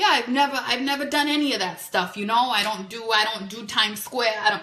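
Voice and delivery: Italian-flavored New York accent.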